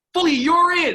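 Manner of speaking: very loud, shrill, high-pitched, full-throated yell. Act out the man yelling from the end of the bench after a goal, retelling Jimmy Halton's yell. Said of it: "Jimmy Halton's yelling".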